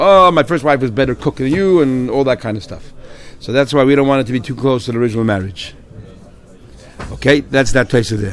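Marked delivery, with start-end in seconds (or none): none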